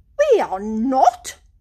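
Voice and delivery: huffy, miffed tone. Toad answers the girl's remark about his figure, in a huff. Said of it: "said the Toad in a huff".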